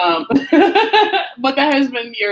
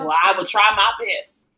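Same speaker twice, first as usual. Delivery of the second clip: put-on, mock country accent; 3 semitones lower than usual. Mimicking how a wrestler talks in his promos, imitating a country accent. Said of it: "Now he's got a country accent".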